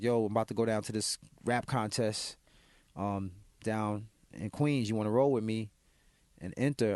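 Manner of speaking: ordinary talk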